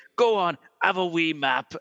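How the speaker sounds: put-on heavy, weighty Glasgow accent, slow. Retelling a tour bus remark in glasgow: weighty glasgow accent. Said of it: "Glasgow is a lot, um, weighty".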